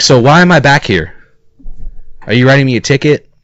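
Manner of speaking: play-acted mad, angry, confrontational, challenging tone. Retelling own reply to the officer after being pulled over: imitating own angry question. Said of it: "I was so mad".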